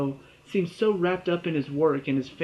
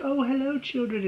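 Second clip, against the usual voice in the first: sugary-sweet, very high-pitched voice; 9 semitones higher than usual. Recapping a scene where a character greets children outside her house, Justice Strauss's really sweet voice. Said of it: "talking to them in this like really sweet voice".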